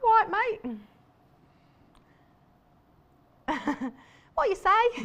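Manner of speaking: put-on, squeaky, very high Cockney bird voice. Voicing a little bird looking around, in a put-on cockney accent. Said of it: "Don't know why he's Cockney".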